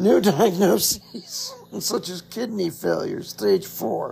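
talking through laughter, swooping pitch. Listing new diagnoses, laughing while speaking. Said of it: "I can say that and laugh".

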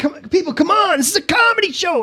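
imitated near-yelling. Retelling how he scolded the crowd at a comedy show: imitating someone nearly yelling. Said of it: "he would literally almost get to the edge of yelling at him".

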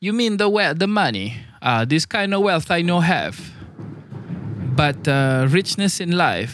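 bad Jamaican accent. Speaker quotes a man's answer about being rich, in a bad Jamaican accent. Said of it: "my attempt at a Rastafarian accent, a Jamaican accent".

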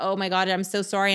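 ordinary talk, nothing marked

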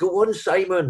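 put-on very high-pitched, encouraging Geordie accent. Retelling spectators cheering runners on: imitating a Geordie accent. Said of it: "this Geordie accent come flying at you".

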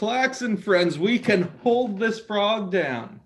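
calling out in a character voice. Voicing a character calling out to Klaxon allies: yelling out in character. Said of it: "I'm gonna yell out".

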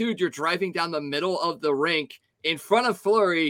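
usual speaking voice

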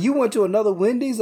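mock mad, demanding, angry delivery. Retelling what the one who fired them asked: imitating an angry boss. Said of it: "he got mad 'cause he was like".

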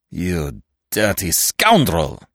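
snarled through gritted teeth. A man, taunted by the one asking if he is recognized, snarls between his teeth. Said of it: "Ganimard snarled between his teeth".

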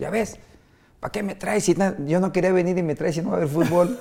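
put-on high, whiny child's hollering yell. Retelling how a young player yelled at his mother: imitating a child yelling. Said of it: "Le grita a su mamá".

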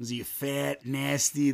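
put-on Midwestern Chicago accent with hard, flat A's. Retelling own past teasing of a sister: chicago accent, hard a. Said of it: "that Midwestern Chicago, like, hard A".

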